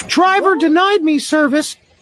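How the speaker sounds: squeaky cartoon mouse. Saying the driver denied service, in a voice like Mickey Mouse. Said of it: "What's with that voice?".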